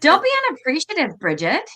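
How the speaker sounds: put-on sassy voice with sing-song up-and-down swoops. Retelling a message heard during a card reading: imitating a sassy message. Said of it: "this is a little sassy".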